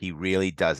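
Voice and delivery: ordinary talk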